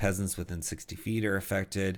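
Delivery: ordinary delivery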